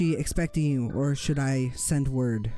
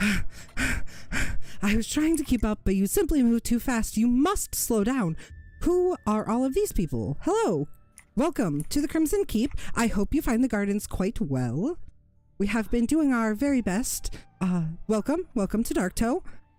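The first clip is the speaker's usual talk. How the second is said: out-of-breath put-on goblin woman voice; 9 semitones higher than usual. Voicing a goblin woman who ran to catch up: out of breath goblin woman. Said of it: "out of breath".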